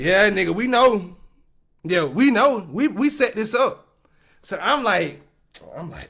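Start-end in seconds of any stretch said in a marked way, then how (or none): none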